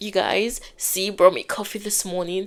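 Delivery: put-on American accent. Imagining a woman filming a mirror video about her coffee, imitating her American accent. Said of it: "imagine her in her American".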